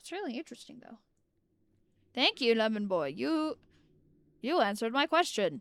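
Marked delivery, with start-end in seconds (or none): 2.1-5.6 sarcastic, swooping sing-song tone throughout. Thanking someone for answering a question, sounding sarcastic. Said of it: "I sounded so sarcastic there".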